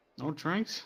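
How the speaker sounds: muttering quietly under breath. Voicing an innkeeper as a patron turns away: muttering under her breath. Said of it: "she mutters under her breath".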